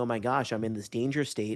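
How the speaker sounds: ordinary delivery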